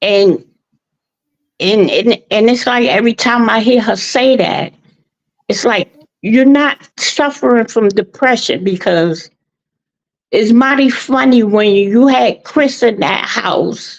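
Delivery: emotional, halting, words tumbling out. After condolences on her father's death, getting a little emotional. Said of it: "I'm getting a little emotional".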